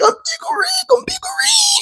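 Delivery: very high, squealing pig-squeal shriek. Retelling a man rolling on the floor, imitating his squealing scream. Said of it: "screaming Pickle Rick like he was a pig squealing".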